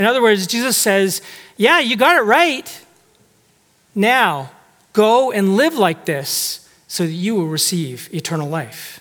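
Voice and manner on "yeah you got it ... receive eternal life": mocking, sarcastic tone. Retelling what Jesus says to the lawyer: imitating a sarcastic tone. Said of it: "Can you hear the sarcasm in Jesus' voice".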